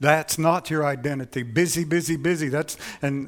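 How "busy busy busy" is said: a little bit of Mexican accent. Quoting young leaders on busyness, the speaker uses a slight Mexican accent. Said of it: "I'm saying it with a little bit of a Mexican accent".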